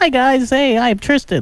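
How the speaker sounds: put-on squeaky, very high teen voice. Showing what a fifteen-year-old named Tristan sounds like: Tristan impression. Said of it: "You'll have to just imagine what he sounds like. Here, It's, it's like this".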